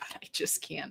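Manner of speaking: hushed whisper.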